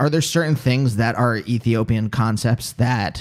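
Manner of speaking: ordinary delivery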